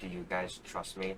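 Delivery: very quiet, hushed, secretive conspiratorial half-whisper. A player's character pulls two companions close, half-whispering. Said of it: "whisper something to them".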